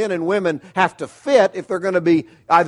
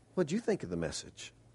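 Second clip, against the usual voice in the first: very soft, hushed, falsely modest mock-humble near whisper; 4 semitones lower, 20 dB quieter than usual. Retelling how he asked her in the kitchen about the message, mock-humble voice. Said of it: "in my most humble voice".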